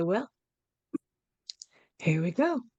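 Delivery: quick, low-key, understated, unfussy delivery. Narrating, the speaker voices a character who looks at everyone, very quiet. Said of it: "just very quietly say".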